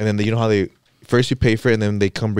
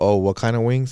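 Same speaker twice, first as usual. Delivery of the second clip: ordinary delivery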